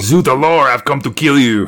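put-on French accent. Joking about the Michelin Man coming to kill: French-accented Michelin Man. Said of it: "He's got a French accent".

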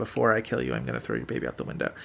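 mock, very soft, quick, offhand, matter-of-fact. Describing a scene, the speaker quotes what he said, quoting someone matter-of-factly. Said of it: "so matter-of-factly say".

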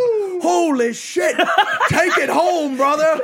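loud, very high whooping yell. Retelling a fight in which he yelled out while throwing the speaker in: retelling a loud yell. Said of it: "he yells out loud".

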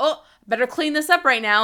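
mock slightly defensive, pointed, passive-aggressive tone. Retelling how she reacts every time something gets done, mock-defensive tone. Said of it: "she says it in a little bit of like a defensive way".

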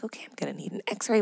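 low hushed remark. Retelling what the dentist said to the dental assistant, low-voiced aside. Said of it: "in a low voice to the dental assistant".

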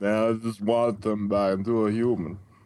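put-on mumbled voice, hard to understand. Imagining how Sylvester Stallone would sound voicing a character: Sylvester Stallone impression. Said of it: "when you do a Sylvester Stallone".

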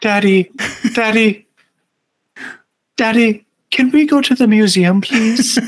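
put-on high-pitched street-urchin kid voice. Picturing a small child beside a parent fixing a car: Dickensian street urchin voice. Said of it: "a Dickensian street urchin about five or six years old next to them going".

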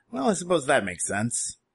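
amused little giggle through the words. Game master as Henrik, on seeing the three players, giggling while speaking. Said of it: "giggles to himself and says".

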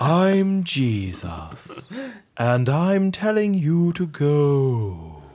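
dramatized, high, swooping voice with "go" drawn out. Describing a narrator's different voice for Jesus, the speaker imitates the Jesus voice. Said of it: "and then Jesus' voice will go".

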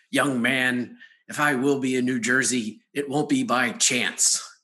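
gravelly, raspy, deliberate voice. Retell the reply to a man while signing his book, imitating RC Sproul's gravelly voice. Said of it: "with his gravelly voice".

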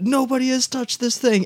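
play-acted screaming, pitched way up high. Retelling how the drummer reacted to a dusty house kit: imitating someone screaming. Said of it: "is just screaming".

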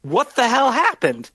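put-on elderly man's voice, pitched very high. Narrating the scene, voicing someone heard after the screaming, older man's voice. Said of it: "older male voice being like".

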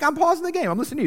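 high, defensive protest. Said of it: "I'm like".

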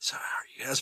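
quiet whisper. Showing how to ambush listeners during a whisper episode: whispering. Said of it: "while whispering".

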